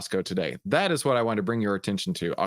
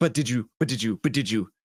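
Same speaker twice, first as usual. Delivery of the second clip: pushy, badgering, interrupting, cutting-in voice. Retelling an interviewer who keeps cutting off a guest: imitating an interviewer cutting in. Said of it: "Then she'd be like".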